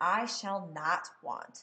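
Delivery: slow, with I and not stressed. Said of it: "I want to have stress that I".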